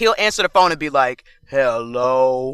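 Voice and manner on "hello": deepest, slowest, much lower grandpa voice. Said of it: "the deepest, slowest voice".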